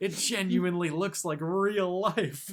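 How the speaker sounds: amazed, drawn out. Retelling how parents reacted watching a game: imitating amazed parents. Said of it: "They're like".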